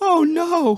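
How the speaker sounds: squeaky, very high voice. Retelling how an employee reacted to the schedule: Trace voice imitation. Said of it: "This is actually how he sounded".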